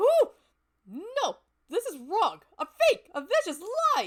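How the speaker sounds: frenzied outburst. Student in the cafeteria going nuts over pudding. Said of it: "San saw the pudding in here and went nuts. / San saw the pudding in here and went nuts. / Yeah, my voice was a little bit shot trying to do that".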